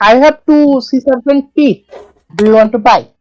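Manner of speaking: high, fake, put-on broken-English foreigner voice. Player offers to sell sea serpent teeth in a game, fake foreign broken English. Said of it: "talking like a foreign person in a different country trying to speak English".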